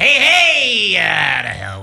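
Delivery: belted high and loud, swooping. Asked for one more impression before heading out, doing a Krusty the Clown voice. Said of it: "If you can name that character".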